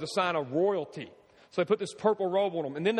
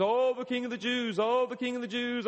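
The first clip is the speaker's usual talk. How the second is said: put-on, high, sneering, derisive taunting jeer; 5 semitones higher than usual. Telling how the barbarians knelt before him, acting out their mocking taunt. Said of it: "They mockingly got on their knees".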